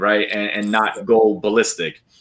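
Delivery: plain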